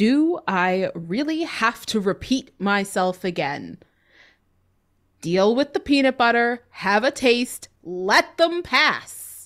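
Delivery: very stern, authoritarian, commanding tone. Voicing a creature with mandibles, in a very authoritarian kind of voice. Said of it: "in this very authoritarian kind of voice".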